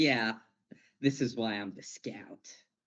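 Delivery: mock boastful, show-off voice. Imitating a character who is showing off: imitating a show-off. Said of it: "showing off".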